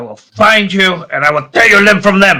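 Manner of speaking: high, seething, wrathful, furious voice. Threatening a character called a puppet during a scene, angry yelling. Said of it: "who the hell are you yelling at?".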